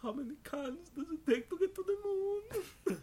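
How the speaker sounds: very high-pitched, choking put-on character voice.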